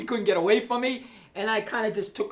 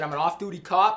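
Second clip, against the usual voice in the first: normal talking voice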